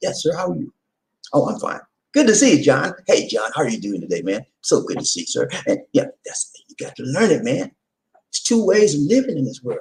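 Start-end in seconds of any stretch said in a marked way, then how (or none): 0.0-5.5 smooth, polished, animated, professionally polite tone. Retelling the way they learned to talk at a corporate job: imitating own polished corporate talk. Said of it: "I had to learn how to talk".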